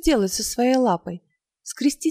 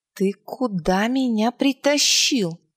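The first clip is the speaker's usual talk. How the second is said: growling, snarling voice; 2 semitones lower than usual. A narrator reads Angua's question to Gaspode, growling. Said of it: "прорычала она".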